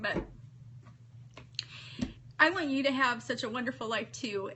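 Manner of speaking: tearful, crying voice, speaking through tears. Addressing the summit audience, crying while speaking. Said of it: "Sorry I'm crying".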